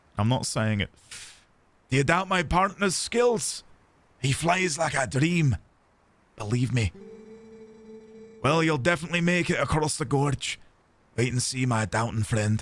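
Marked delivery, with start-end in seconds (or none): 1.9-12.7 put-on Scottish-accented character voice. Speaker voicing a character in a fantasy game: Scottish accent. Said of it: "I'll tell you why I do Scottish".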